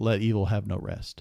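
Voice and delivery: ordinary delivery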